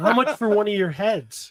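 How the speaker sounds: ordinary talk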